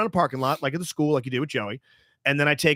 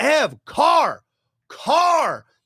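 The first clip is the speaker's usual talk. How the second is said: mock alarmed, very high, swooping shout; 11 semitones higher, 4 dB louder than usual. Retelling warning a cyclist pedaling toward an intersection, retelling a yell. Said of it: "and I'm yelling".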